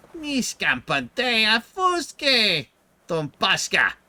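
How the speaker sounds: very high-pitched, very loud, gabbling voice. Showing that the words work even in a higher pitched voice. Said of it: "a higher pitched voice like this".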